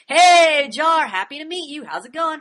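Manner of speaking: lots of bouncy, lively inflection in the voice. Contrasting the speaker's own way of talking with a bro's flat statements, lots of voice inflection. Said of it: "Not like me".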